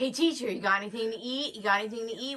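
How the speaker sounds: put-on rowdy, pestering middle school boy voice. Describing an impersonation of a middle school boy asking the teacher, imitating a middle school boy. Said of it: "did this whole impersonation of a middle school boy".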